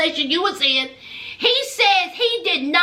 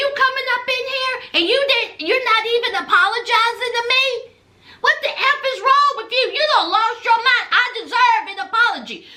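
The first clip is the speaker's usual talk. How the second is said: mock indignant, high-pitched, scolding tone; 5 semitones higher than usual. Retelling a woman going off on Martell: imitating her raised voice. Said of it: "she raised her voice".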